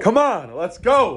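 put-on eager, rousing rally-style cheering. Just picked in the NFL draft, the player is yelling. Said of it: "Almost sounds like he's yelling".

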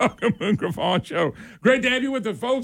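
very high voice talking through laughter. Opening the show on the air, greeting listeners: laughing while talking. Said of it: "as I'm laughing".

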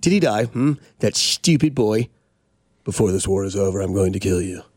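low movie villain voice. Talking about the Jets, speaker quotes a movie line, imitating the guy from The Patriot. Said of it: "I sound like the guy from the Patriot".

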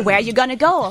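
ordinary talk, nothing marked

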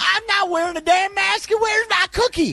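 high-pitched caricature voice. Co-hosts joking about Florida in the pandemic, redoing a put-on Florida voice on request. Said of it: "Do that voice again, [name]".

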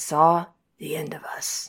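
low, slow, pensive, deliberate delivery. Retelling a famous TV scene line, impression of Casey. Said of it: "I'm gonna try to give my best imper-, impersonation".

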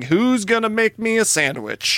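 put-on rowdy, drunken, whiskey-soaked hollering. Speaker recalls a drunk man yelling the same question over and over: retelling a drunken yell.

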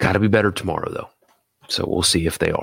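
whispering. Summing up tonight's win before signing off: whispering. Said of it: "sorry for, uh, for the whisper".

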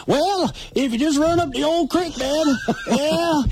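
put-on phony, very high old-timer prospector accent. Mocking phonies rising through the ranks, the speaker imitates their fake old prospector accent. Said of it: "the fake phony old prospector accent".

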